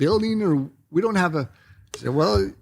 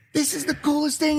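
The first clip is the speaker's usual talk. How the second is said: mock-excited scream, much higher in pitch; 10 semitones higher than usual. Retelling a takeoff with Kai aboard, imitating Kai's excited screaming. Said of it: "Kai starts screaming".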